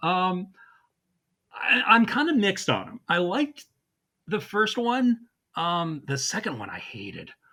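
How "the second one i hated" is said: lowered voice, deeper and quieter. Saying which of two movies was hated: deeper voice. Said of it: "your voice got deeper on that second one".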